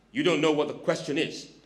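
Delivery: plain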